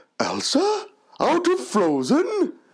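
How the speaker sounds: very high, swooping, drawn-out delivery. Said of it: "Can you do your Santa voice?".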